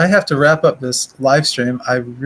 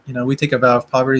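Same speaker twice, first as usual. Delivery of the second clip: ordinary talk, nothing marked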